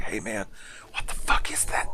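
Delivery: creepy, hushed, stoner-style whisper. Retelling a creepy stoner guy on the subway: imitating a creepy stoner whispering. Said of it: "whispers to the person next to him".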